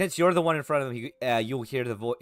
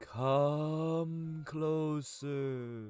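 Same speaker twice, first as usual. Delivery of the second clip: faint, soft, distant call, "come" drawn out; 3 semitones higher, 8 dB quieter than usual. Voicing a voice carried faintly on the wind: faint voice on the wind. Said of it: "kind of faintly in the wind a voice just going".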